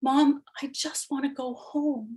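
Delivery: soft, faint, barely-there half-whisper. A mother recounts her son's words during his hospital stay, retelling a son's half-whisper. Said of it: "My son whispered".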